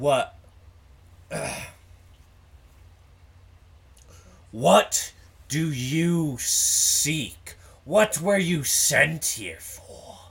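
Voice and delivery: very loud, very shrill, booming demon-like cry. Voicing a figure questioning intruders in its domain, booming demonic voice. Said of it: "It's in a booming, strange language that sounds kind of demonic".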